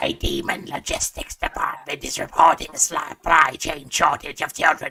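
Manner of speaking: rough, scratchy, raspy smoker's voice. Voicing a god character when asked to: scratchy smoker voice. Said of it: "I'll do this in the scratchy smoker voice".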